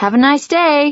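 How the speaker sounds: high, forced, fake cheery voice. Noah says goodbye to a man who only grunts, in a fake cheery voice. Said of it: "Noah says in a fake cheery voice".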